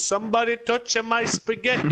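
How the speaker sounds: dumb, stupid-sounding put-on American accent. Imitating someone who walks in and says a meme line: stupid american accent. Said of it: "this stupid fucking American accent".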